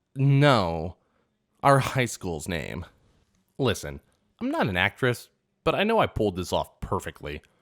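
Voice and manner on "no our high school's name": put-on puzzled, thrown tone with drawn-out "no". Retelling a classmate's answer about their old school: imitating a confused reply. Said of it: "she replied confused".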